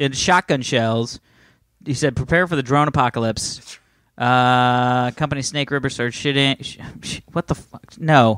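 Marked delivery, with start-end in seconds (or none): none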